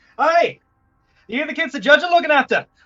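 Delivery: very high, loud, botched Irish brogue. A player voices the man rolling down his Hummer window, in a bad Irish accent. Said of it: "Why are you Australian?".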